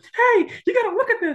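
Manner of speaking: very high, mock bursting-with-energy call. Retelling what Jen said while showing a video: imitating Jen's high energy. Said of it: "I'm trying to mimic her 'cause she, she's got so much energy".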